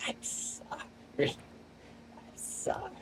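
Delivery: thin, squeaky, strained, whispered voice. Retelling what Brock said while in pain, imitating Brock's squeaky, strained voice. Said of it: "the very squeaky, strained voice of Brock being like".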